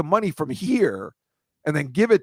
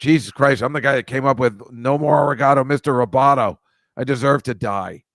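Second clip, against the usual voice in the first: put-on loud, furious, bitter angry outburst; 2 semitones lower, 5 dB louder than usual. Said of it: "he's really angry, and he goes".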